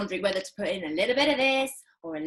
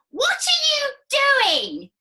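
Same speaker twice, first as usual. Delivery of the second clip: shrill, very high, piercing grandma voice; 6 dB louder than usual. Reading a story aloud, Grandma calls to George from next door, shrill voice. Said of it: "came a shrill voice".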